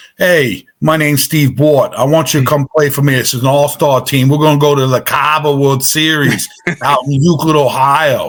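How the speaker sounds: put-on New York–accented voice. Retelling a phone call from an all-star team's caller, imitating Steve Bort's New York accent. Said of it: "New York accent".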